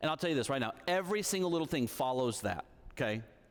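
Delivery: normal talking voice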